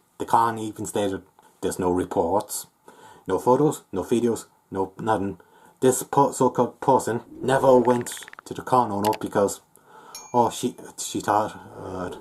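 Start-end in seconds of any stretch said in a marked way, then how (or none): none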